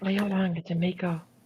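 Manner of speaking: whispered voice. Speaking in character, secretly telling Naomi to play along: whispering to Naomi. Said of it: "whisper to Naomi".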